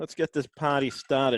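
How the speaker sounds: attempted, put-on Boston accent. Joking around before getting started, line in a Boston accent. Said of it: "I said in my best Boston accent".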